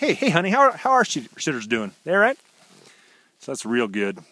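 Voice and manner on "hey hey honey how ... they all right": high, loud, cheery call. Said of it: "Clark's like".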